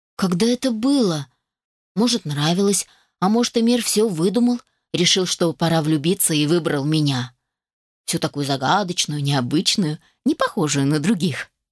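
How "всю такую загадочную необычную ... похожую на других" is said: ordinary delivery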